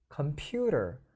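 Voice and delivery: middle syllable pu of computer stressed. Pronunciation practice finding the stress in computer: stress on middle syllable pu. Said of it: "중간에 있습니다. computer 이렇게 들어가 있다는 거죠".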